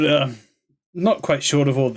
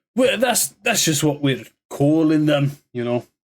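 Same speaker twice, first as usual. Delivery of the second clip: rough, gruff dwarf character voice. In a role-playing game, a dwarf answers a player's question: gruff dwarf voice. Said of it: "you were talking a bit more gruff".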